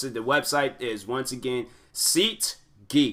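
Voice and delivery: slow, deliberate, spelled-out delivery.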